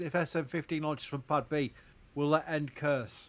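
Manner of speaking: ordinary delivery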